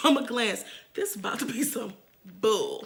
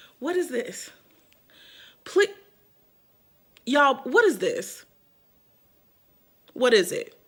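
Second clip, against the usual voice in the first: very angry, losing breath. Showing viewers the wrong wig that arrived: so mad, losing breath. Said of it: "I'm losing my breath 'cause I am so mad".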